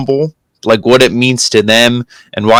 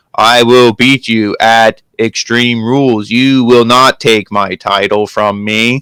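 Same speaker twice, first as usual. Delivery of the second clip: very slow, emotionless, flat robotic monotone. Mocking wrestlers who read promos like a robot: imitating a robotic wrestler promo. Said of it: "it sounds like a robot".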